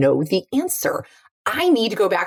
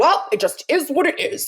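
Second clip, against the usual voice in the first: put-on guarded, clammed-up voice giving nothing away; 10 semitones higher than usual. Contrasting founders with investors, the speaker acts out an investor: imitating a clammed-up investor. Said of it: "investors are like the exact opposite. They're like".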